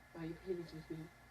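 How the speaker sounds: sultry put-on voice. Joining in after a co-host shows off a sexy voice, put-on sexy voice. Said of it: "I've been working on my sexy voice".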